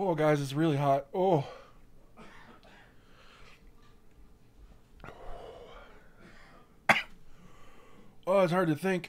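high, loud, teary, half-crying exclamations. Talking to the group after eating something hot, crying from spicy food. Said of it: "I'm literally crying".

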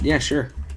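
cheerful, upbeat voice.

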